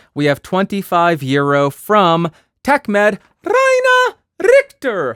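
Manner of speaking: weird, animated high register, swooping up. Reading out a donor's name and gift, in an unusually high register. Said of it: "never gone into that register for his voice".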